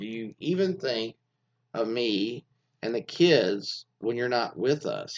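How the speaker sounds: ordinary delivery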